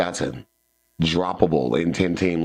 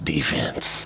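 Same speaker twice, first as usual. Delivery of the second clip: sinister, dark villain voice; 3 semitones lower, 4 dB quieter than usual. Football talk, saying the word defense with a villainous voice on 'defense'. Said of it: "I just like saying defense in the villainous voice".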